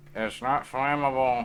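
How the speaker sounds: muffled, high, loud shout, as if smothered. A game narrator voices something peeking out of a bucket: muffled Nixel voice. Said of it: "You hear a muffled Nixel voice".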